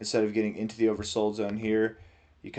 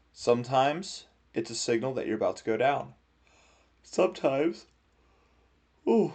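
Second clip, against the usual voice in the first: said through a yawn, pitched higher; 4 semitones higher than usual. Explaining a chart to listeners, yawning. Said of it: "I'm sorry I keep yawning".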